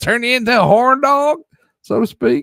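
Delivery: put-on southern accent, very high and loud. Musing on what passion fruit might do, slipping into a southern accent. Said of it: "Why did that southern voice come out".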